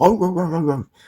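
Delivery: a dog voice barking out words as yaps. Voicing somebody's dog that keeps barking early in the morning: voicing a barking dog. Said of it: "barking their lungs out".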